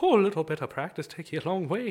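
put-on Irish brogue. Answering praise in character: put-on Irish accent. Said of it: "you're also really good at Irish".

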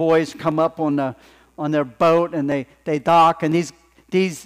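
ordinary delivery, nothing marked

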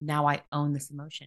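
ordinary talk

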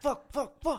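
high, fast, panicked voice. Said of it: "I was like".

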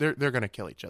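ordinary delivery

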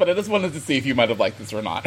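ordinary talk, nothing marked

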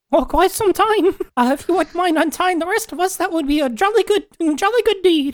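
tiny, very high storybook elf voice. Roleplaying an elf character answering another player: elf voice. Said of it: "Let me get my best elf voice".

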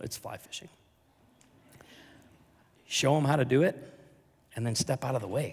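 choked-up, moved, emotional delivery. Speaking about what church leadership is: getting emotional. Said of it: "I know I'm getting emotional".

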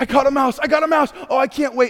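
put-on, high, giddy, overjoyed excited hollering. Retelling people who caught a mouse: imitating excited screaming. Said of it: "They started screaming at the top of their lungs".

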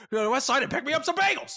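shrill, very high, aggressive, dead-serious yell. Quoting a character's line after noting he yells it: imitating Franklin yelling angrily. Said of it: "He yells this line".

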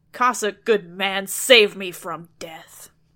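very loud, menacing, threatening voice. Reading a tale where a maiden in the flames calls to a Cossack, threatening voice. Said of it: "she said in a threatening voice".

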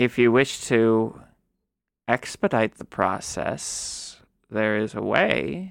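very low, foreboding, ominous tone. Speaking in character to players who want to find a way: ominous. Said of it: "You sounded really ominous when you said that".

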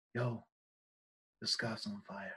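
calm, smooth, low, soft, almost hushed voice. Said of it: "In the smoothest voice".

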